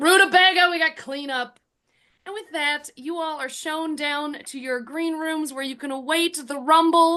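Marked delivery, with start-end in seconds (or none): 0.0-1.6 full-out, loud shouted yell. Voicing a tavern owner who throws open the door: yelling. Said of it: "and then just yells".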